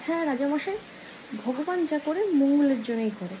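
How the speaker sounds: plain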